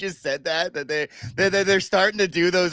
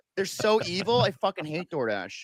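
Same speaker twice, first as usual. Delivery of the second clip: usual speaking voice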